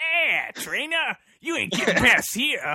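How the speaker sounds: very high, loud New York mobster tough guy voice. Describing how they want Meowth to sound, in a New York mobster Meowth voice. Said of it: "that like, New York mobster guy".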